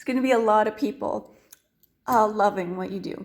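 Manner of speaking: teary voice, choking up with emotion. Encouraging someone about their work, the speaker is getting teary-eyed. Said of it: "I'm going to get teary-eyed here".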